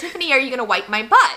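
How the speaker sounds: ordinary talk, nothing marked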